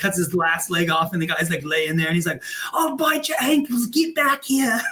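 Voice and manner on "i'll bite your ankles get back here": very high, squeaky comic voice. Retelling a movie scene for listeners: Monty Python and the Holy Grail impression. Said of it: "That's my impression of Monty Python and the Holy Grail".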